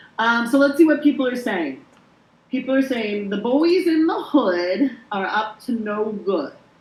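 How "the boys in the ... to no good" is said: slow, deliberate, drawn-out delivery, leaned on. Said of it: "You said that like Bill Cosby".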